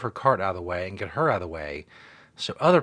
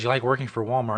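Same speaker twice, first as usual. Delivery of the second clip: plain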